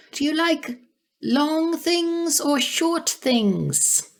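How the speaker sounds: put-on very high, tiny, teeny fairy-creature pixie voice. Voicing the little pixie asking Arya a question: tiny pixie voice. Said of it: "The little pixie".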